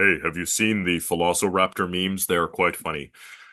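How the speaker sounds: deep, big-guy voice. Recalling what a colleague once told them, deep voice imitating Nathan. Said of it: "a bodybuilder philosopher with a deep voice".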